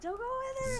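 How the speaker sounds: very high-pitched, loud shouting. Voicing someone on a ship still warning the players: shouting a warning. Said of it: "shouting at you to stop".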